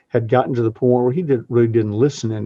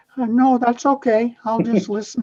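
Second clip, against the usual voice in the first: very high, squeaky voice; 12 semitones higher than usual. Declining an invitation to join in at a lunch, Minnie Mouse voice. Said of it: "in my Minnie Mouse voice".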